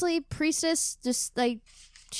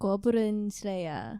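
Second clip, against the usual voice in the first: low, hushed, put-on Japanese accent; 4 semitones lower, 5 dB quieter than usual. Showing how the title is said in Japanese, a possibly racist Japanese impression. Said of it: "very possibly racist impression of the Japanese language".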